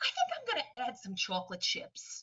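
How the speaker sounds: heartfelt, passionate, put-on New York accent. Speaker acting out feeling confident making a cake, passionate new york accent. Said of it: "with the New York accent".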